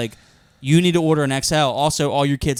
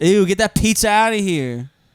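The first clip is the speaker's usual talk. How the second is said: sassy, pitched-up put-on voice; 6 semitones higher, 4 dB louder than usual. Giving a voice to a tooth in the other speaker's mouth, sassy tooth voice. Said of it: "Sassy ass teeth".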